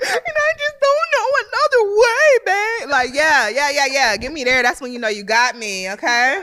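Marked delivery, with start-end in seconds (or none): 0.0-2.9 very high, teary, on-the-verge-of-tears voice. Acting out a teary confession in a serious conversation: mock tearful, tearing up. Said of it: "a conversation where I'm tearing up".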